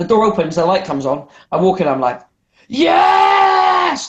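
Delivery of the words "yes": play-acted, very high, full-throated top-of-the-lungs whoop. Retelling walking into someone's room at four a.m., imitating a shout at top of voice. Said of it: "Top of my voice".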